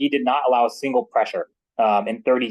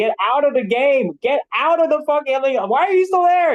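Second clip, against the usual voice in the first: very high, worried, climbing scream; 14 semitones higher, 4 dB louder than usual. Retelling seeing players still in with five minutes left: imitating own screaming. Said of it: "And I was screaming".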